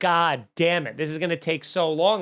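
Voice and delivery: ordinary delivery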